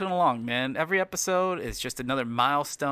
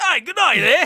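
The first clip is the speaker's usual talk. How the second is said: bad South African accent, very high, very loud; 13 semitones higher, 10 dB louder than usual. Asked by the other speaker to show off accents, doing a South African accent. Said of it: "do South South African".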